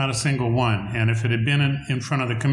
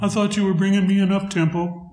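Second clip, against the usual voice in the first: small, high-pitched little voice; 8 semitones higher than usual. Retelling what Barry said on hearing a ballad, imitating his soft voice. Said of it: "Barry in his little soft voice goes".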